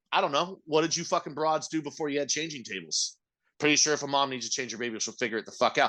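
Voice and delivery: ordinary talk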